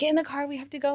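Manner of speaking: re-enacted yell. Recalling getting to the car in a panic, retelling yelling at Nick. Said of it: "And I remember yelling at Nick".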